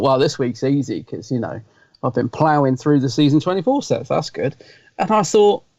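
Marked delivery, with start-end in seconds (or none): none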